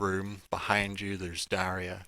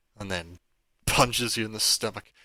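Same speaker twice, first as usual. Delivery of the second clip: ordinary delivery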